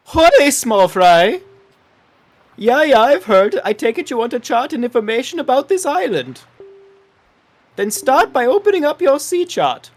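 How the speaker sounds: put-on loud, high-pitched talking-fish voice. Playing a game, voicing fish number one as a co-player once did, talking fish voice. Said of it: "He's changing accent".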